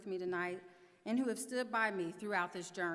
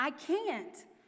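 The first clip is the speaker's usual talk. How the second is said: mock outburst, raised, high yell; 6 semitones higher, 5 dB louder than usual. Recounting the delivery, the speaker answers the nurse: retelling a yell. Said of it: "I yelled at her".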